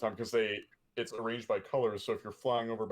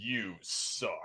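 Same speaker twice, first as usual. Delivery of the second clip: mock venomous announcer voice; 3 dB quieter than usual. Recounting a game's voice that scolded teamkillers, imitating a venomous game voice. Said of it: "But like very, very venomous".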